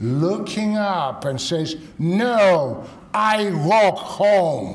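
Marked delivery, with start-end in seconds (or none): 2.0-4.8 booming voice, very slow and drawn-out. Speaker retells little Kate refusing help, little Kate's booming voice. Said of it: "with a booming voice".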